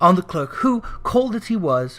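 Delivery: ordinary delivery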